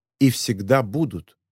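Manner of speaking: ordinary delivery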